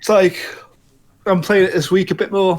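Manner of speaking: words swallowed by a yawn. Talking about a game he's playing this week, yawning while talking. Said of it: "Sorry for yawning".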